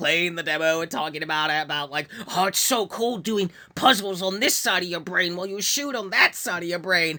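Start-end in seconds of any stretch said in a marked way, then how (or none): 2.3-7.2 put-on gushing fan voice. Retelling how Max talked about playing the demo: imitating Max gushing. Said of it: "gushing about Pragmata".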